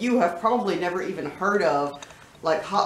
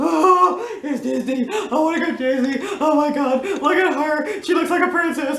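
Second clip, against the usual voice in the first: high, put-on weepy, teary fake crying voice; 9 semitones higher, 4 dB louder than usual. Acting out their own reaction to Disney commercials on YouTube, in a mock crying voice. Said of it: "I'm crying".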